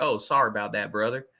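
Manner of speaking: light, slight, almost southern drawl on the words. Retelling what Dan Uggla said after the speaker's beer bottles shattered on him; almost southern drawl. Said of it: "this almost southern drawl".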